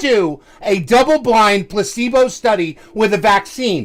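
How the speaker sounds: yelling. Arguing with another speaker, yelling. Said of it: "You're yelling".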